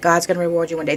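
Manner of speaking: normal talking voice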